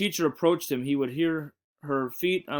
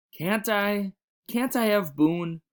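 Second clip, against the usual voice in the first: timid little voice, small, high and slow; 5 semitones higher than usual. Narrator reads a character asking another a question, in a small voice. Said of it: "Asked Patrick in a small voice".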